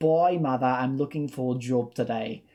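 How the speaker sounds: clumsy, really bad put-on English accent. Recalling the only line remembered from a seventh-grade school play, really bad English accent. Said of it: "my seventh grade attempt at an at a really bad English accent".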